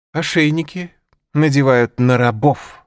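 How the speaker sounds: scornful contemptuous mocking. Narrator reads Tequila answering the narrator's offer, contemptuously. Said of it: "— сказала Текила презрительно".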